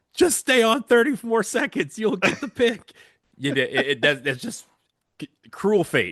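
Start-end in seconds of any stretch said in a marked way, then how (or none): 0.2-2.8 frustrated yelling, much higher and louder. Recalling listening in the car when the show signed off, retelling frustrated yelling. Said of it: "I'm like yelling at my car".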